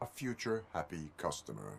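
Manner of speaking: put-on robotic voice. In a scene, one character speaks to the other in a RoboCop voice. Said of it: "fucking RoboCop!".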